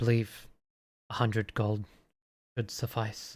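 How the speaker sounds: voice dropped right down, low and quiet. A character leans forward to name a payment in gold, lowered voice. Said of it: "lowers his voice".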